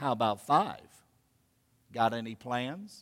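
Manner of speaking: flirtatious, low, soft, sultry voice. Retelling an elevator story, voicing a woman's reply to an author, imitating a sultry voice. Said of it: "responded in a rather sultry voice".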